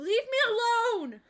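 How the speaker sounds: very high, very loud, piercing shriek. Narrating a scene, the storyteller voices a voice that screams, screaming. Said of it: "you hear this voice just scream".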